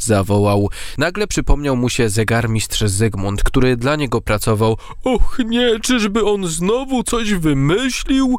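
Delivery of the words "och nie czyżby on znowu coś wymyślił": frightened cry, very high, slow and drawn out. A character forced to walk backwards speaks, frightened. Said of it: "Przestraszył się Ojczulek Czas".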